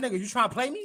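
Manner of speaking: put-on angry New York accent. Retelling a woman's angry words about a missed call: imitating an angry New York accent. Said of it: "she got mad at me".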